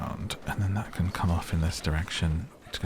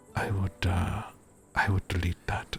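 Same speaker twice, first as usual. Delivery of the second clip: put-on simple elderly man voice with Danish accent. Retelling a documentary scene, quoting the drummer's dad: imitating an old Danish man. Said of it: "old Danish guy with".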